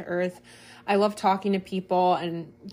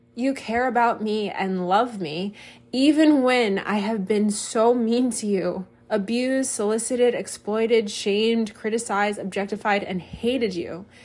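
very slow, deliberate reading aloud. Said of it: "I wanted to read that very slowly".

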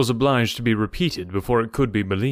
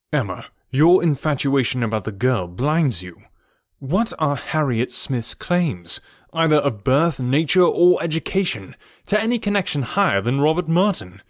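ordinary delivery

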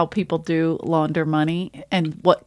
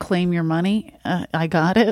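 ordinary delivery

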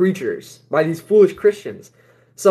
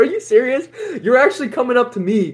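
play-acted high, incredulous laugh through the words; 7 semitones higher than usual. Speaker retells a man approaching while they were meditating, retelling laughing at him. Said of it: "I just laughed at him".

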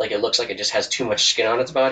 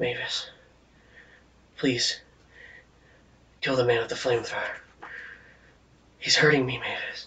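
soft voice speaking from nearby; 6 dB quieter than usual. Game master speaks as the player character's father, addressing her: father's voice. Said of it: "you hear your father's voice".

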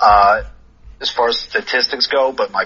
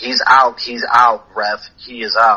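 plain

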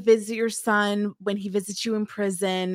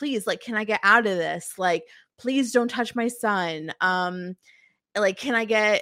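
mock pleading, begging tone. Retelling a scene where she begs the agent: imitating someone begging. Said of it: "she's begging him".

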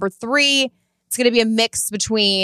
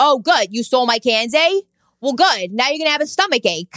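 put-on Long Island accent, kid voice; 2 semitones higher than usual. Retelling what a kid said after his candy was stolen: imitating a typical Long Island kid. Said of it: "It was a typical Long Island kid".

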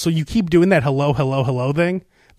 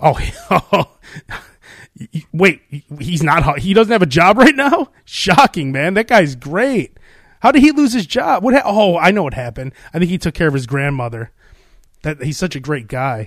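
ordinary talk, nothing marked

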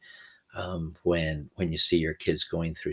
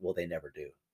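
mock muttered aside, quieter; 9 dB quieter than usual. Retelling the wife's remark: imitating a mutter under her breath. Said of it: "she mutters under her breath".

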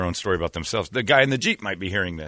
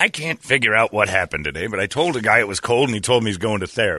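ordinary talk, nothing marked

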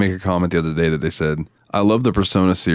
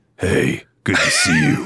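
slow, drawn-out, very high grown-man voice. Retelling how the character talked in the trailer: imitating Clive's manly voice. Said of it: "he sounds like a man".

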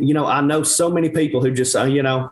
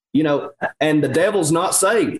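ordinary talk, nothing marked

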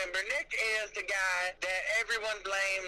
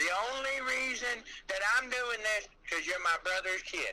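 ordinary delivery

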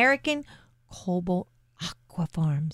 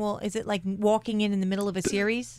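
ordinary delivery

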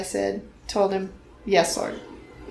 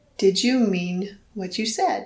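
soft, hushed, quiet voice. Retelling how he asked the same question again at night: soft, quiet voice. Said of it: "he said in a soft, quiet voice".

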